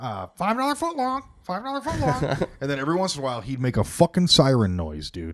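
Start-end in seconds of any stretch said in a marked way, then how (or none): 0.0-2.5 high, swooping, squawky parrot voice. Recalling a caged parrot, the speaker imitates what it would say: imitating a parrot. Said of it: "the bird was in the cage, and he'd be like".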